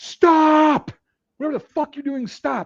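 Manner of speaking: play-acted very high, shrill, loud screaming. Retelling yelling at a soldier loading a rifle wrong: retelling a scream. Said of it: "yelling, screaming".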